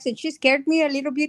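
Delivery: put-on Irish accent, best attempt. Speaker shows off her Irish accent while repeating a remark: Irish accent. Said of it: "look at my, my Irish accent".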